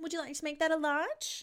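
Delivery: put-on bright, high customer service voice. Going through voices, next the customer service voice: put-on customer service voice. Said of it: "Next is the customer service voice".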